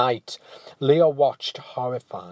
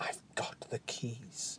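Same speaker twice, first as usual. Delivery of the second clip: hushed whisper, barely audible; 22 dB quieter than usual. Having dragged the huge keys from the room, he speaks, whispered. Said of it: "he whispered".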